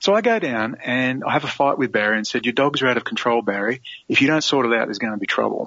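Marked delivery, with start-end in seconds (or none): none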